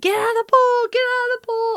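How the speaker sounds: shrill, very high, repeated screaming. Retelling jumping up when lightning struck near the pool: imitating a scream. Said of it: "I was up out of my seat immediately screaming".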